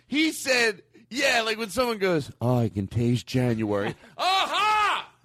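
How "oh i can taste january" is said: mock drugged-out, tripping voice. Speaking to friends around a table, imitating someone on drugs. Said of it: "impersonation of somebody acting like they're on maybe a drug".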